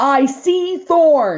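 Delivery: urgent, loud, high-pitched shout. Roz calls out as Thorn hangs from a tree on the rock wall: shouting. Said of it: "shouted Roz".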